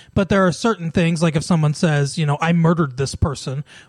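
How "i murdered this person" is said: ordinary talk, nothing marked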